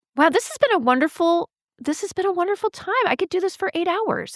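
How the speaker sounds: surprised. Near the end of a conversation, answering the host's question, sounding surprised. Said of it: "You sound surprised".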